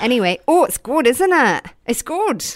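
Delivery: high put-on Scottish or Irish accent. Speaker takes up talking in an accent for three minutes, put-on scottish or irish accent. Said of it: "I think this is Scottish or Irish".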